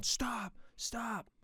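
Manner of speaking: mock yelling. Retelling a story about a stranger shouting urgent orders at a driver, imitating someone yelling. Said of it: "he's like yelling at me".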